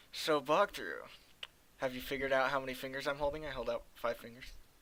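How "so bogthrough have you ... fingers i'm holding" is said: ordinary delivery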